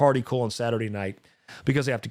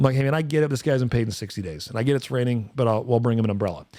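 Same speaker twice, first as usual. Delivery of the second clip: ordinary delivery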